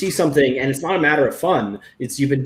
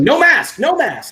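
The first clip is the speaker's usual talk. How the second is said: play-acted very high, stretched-out, drawn-out holler; 12 semitones higher, 5 dB louder than usual. Retelling yelling at a dog that chases masks on walks: imitating own yelling. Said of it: "and I'm yelling".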